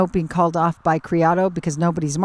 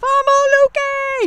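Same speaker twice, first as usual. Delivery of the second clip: mock shrill, very high cheering scream from afar; 4 dB louder than usual. Calling a polo goal, imitating the scorer's mom screaming from the condos: Georgette Escobar impersonation, screaming. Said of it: "my impersonation of Georgette Escobar".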